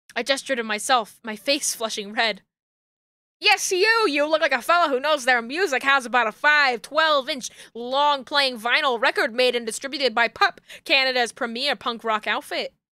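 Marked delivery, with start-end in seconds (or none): 3.3-12.6 pushy, hawker-style carnival-barker sales pitch. Narrator voicing a merch seller on a chair calling out to him: yelling sales pitch. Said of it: "Please stop yelling at me".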